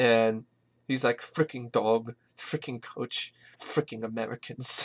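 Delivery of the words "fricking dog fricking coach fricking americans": annoyed, irritated whispered grumbling under the breath. Retelling a movie passenger grumbling in his seat: imitating an annoyed passenger. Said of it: "looking annoyed at them".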